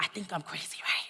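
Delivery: soft, hushed, confiding whisper. Retelling talking to a professor about frustrations, retelling a whisper. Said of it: "and I'm whispering".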